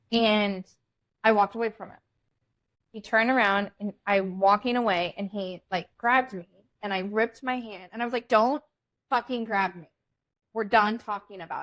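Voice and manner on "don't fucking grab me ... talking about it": put-on raised angry voice. Retelling pulling free from a man who grabbed her: imitating own raised voice. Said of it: "my voice is starting to raise".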